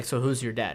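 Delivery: disturbing, very low, deep, hushed, near-quiet, intimidating menace. Retelling a story about a team, the speaker quotes a man, imitating a low intimidating tone. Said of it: "very much so lower, intimidating, uh, and disturbing tone".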